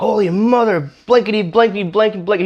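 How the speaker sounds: mock very high-pitched screeching scream. Retelling a man cussing after taking all the Velcro off, retelling screaming and cussing. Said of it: "He starts cussing and screaming".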